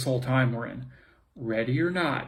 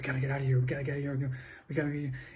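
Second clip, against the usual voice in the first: anxious, paranoid, hushed half-whispered voice; 7 dB quieter than usual. Acting out the mind's fearful voice in a scene: imitating a paranoid half-whisper.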